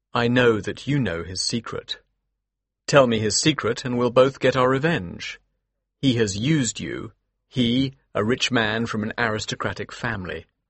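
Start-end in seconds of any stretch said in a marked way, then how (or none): none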